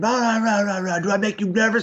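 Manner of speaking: screaming, demanding drill-sergeant style. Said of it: "screaming and screaming".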